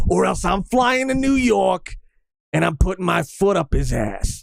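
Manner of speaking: New York accent suddenly slipping out. Threatening to fly to new york over a shirt: new york accent slipping out. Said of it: "my New York came out".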